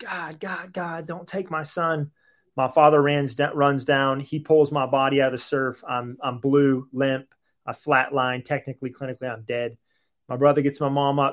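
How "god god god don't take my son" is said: mock stretched-out pleading cry at full volume. Retelling a mother arriving at the beach: imitating someone screaming at the top of her lungs. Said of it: "She's screaming at the top of her lungs".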